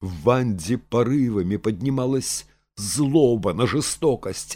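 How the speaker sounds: plain reading voice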